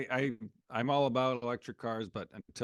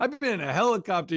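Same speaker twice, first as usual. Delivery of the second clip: mock yelling voice; 7 dB louder than usual. Picturing the other speaker yelling at a kid, imitating someone yelling. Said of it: "Your daughter's like".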